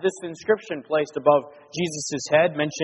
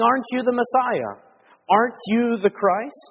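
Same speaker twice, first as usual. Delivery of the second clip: put-on, pitched-up, mocking, jeering, taunting tone; 7 semitones higher than usual. Speaker acts out the criminal's taunt, retelling a mocking taunt. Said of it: "mockingly, he's saying".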